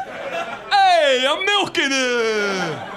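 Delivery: drawn-out, high cow voice. Speaker shows their usual voice for a talking cow, go-to cow voice. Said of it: "anyone else's go-to cow voice".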